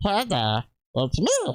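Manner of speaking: swooping, back-of-throat cartoon creature voice. Speaker demonstrating how to do a cartoon character, high-pitched cartoon voice. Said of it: "any high-pitched cartoon character".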